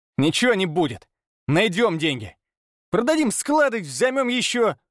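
high, angry voice filled with anger. Narrator reads Pavel replying when the debts are mentioned, angry. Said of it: "налилось злостью".

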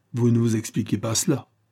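ordinary delivery

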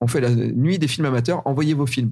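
ordinary delivery

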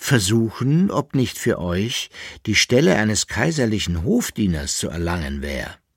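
plain reading voice

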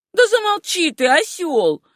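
high-pitched shouting, telling-off tone. Kezia shouts at her brother after he announces his marriage. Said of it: "крикнула Кизия".

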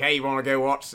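put-on Boston accent gradually drifting into an Australian accent. Commenting on a wrestling match, speaker acts out a line in a Boston-turned-Australian accent. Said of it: "my Boston accent turned into an Australian accent".

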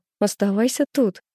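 usual speaking voice

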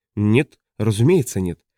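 ordinary talk

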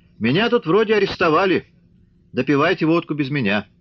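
forced casual shout. Kirill, held at gunpoint by Mishka, calls out to the others, shouting with forced ease. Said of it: "сделанный непринужденностью крикнул Кирилл".

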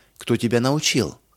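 ordinary delivery, nothing marked

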